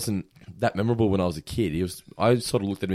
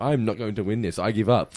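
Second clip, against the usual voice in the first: normal talking voice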